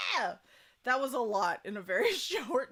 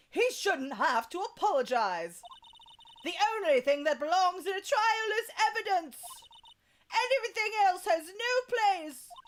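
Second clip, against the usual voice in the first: put-on British accent in higher-pitched child voice; 9 semitones higher than usual. Voicing young Miles Edgeworth in a trial scene: British accent as Miles Edgeworth. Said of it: "How do I do a British accent with a child?".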